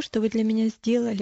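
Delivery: ordinary delivery, nothing marked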